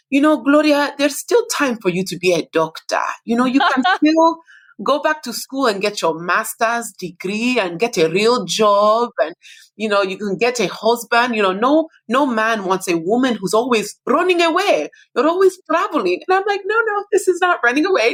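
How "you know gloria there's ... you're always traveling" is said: put-on Nigerian-accented speech. The speaker retells what her mom still tells her, in mom's Nigerian accent. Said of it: "in her Nigerian accent".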